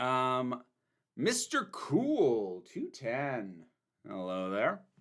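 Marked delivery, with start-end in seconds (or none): 4.1-4.8 slightly flirty, low voice. Greeting a viewer who sent a super chat, in a slight flirty voice. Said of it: "I got slight flirty voice with that".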